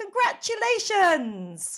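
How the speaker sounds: big voice, very loud and very high pitched. Retelling the young lad behind the cash desk greeting them, big loud shout. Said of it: "said in a big loud voice".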